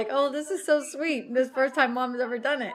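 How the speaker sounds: plain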